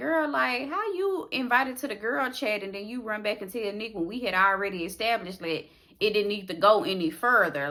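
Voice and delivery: ordinary talk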